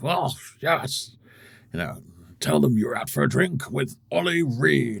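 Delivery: creaky, rough character voice. Showing a voice from a comedy sketch: Oliver Reed voice. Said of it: "I've done the Oliver Reed voice of".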